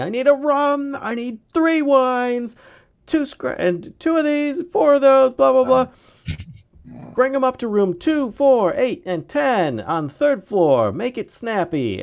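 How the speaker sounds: weird, scary, very high, booming shriek at full volume. The narrator voices a woman calling an order into the back kitchen, bellowing in a scary, weird voice. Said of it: "she like bellows in this really weird voice that sounds much much scarier".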